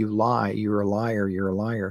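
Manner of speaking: normal talking voice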